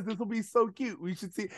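soft, quick, patronizing, talking-down tone. Recapping a storyline, mocking Corey's remark to the girls; imitating Corey being condescending. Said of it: "Corey is so condescending".

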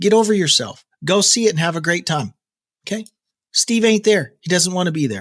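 cranky, grumpy, irritable ranting tone. Telling people who complain that steve is gone to go see the shows anyway: grumpy. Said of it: "I sounded grumpy there".

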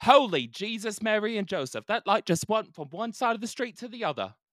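put-on very high, loud British-accented outburst. A man out in the evening reacts to something peculiar, british accent. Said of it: "Why does he have a British accent?".

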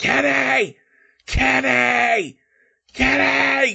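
desperate, frantic loud yelling. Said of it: "And [name] is yelling".

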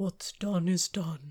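deep, low, resonant cat voice. Speaker demonstrates how the cat sounds: low, resonant cat voice. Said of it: "it's like a low register".

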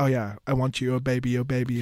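play-acted, very heavy, pointed sarcasm. Retelling Kat's reply when he asks her out: imitating Kat's sarcastic tone. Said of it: "in this very sarcastic way".

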